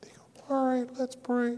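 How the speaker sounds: very quiet, hushed voice pitched very high. Retelling how Paul answered when asked if he wanted to pray, imitating Paul, real quiet. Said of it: "he would talk like this and he'd be real quiet".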